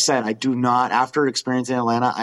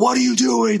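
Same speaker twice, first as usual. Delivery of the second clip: mock scolding yell, very high-pitched; 12 semitones higher, 4 dB louder than usual. Recounting a boot-camp-like arrival in Atlanta, retelling someone's yelling at the group. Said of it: "Like yelling at us".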